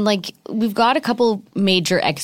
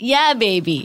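exaggerated, put-on groovy British accent; 3 semitones higher than usual. Friends talking about people acting like Austin Powers; Austin Powers impression. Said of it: "You can all do a good voice like that".

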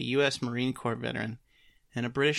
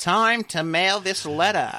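high, loud put-on Maine accent; 6 semitones higher, 6 dB louder than usual. Playing a guy from Maine with a letter, in a put-on Maine accent. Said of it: "The rarely practiced Maine accent".

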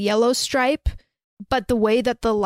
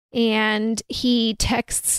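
normal talking voice

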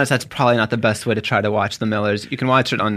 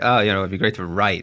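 mock sarcastic delivery. Retelling an answer to the show host, imitating own sarcastic reply. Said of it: "I was just kinda being sarcastic".

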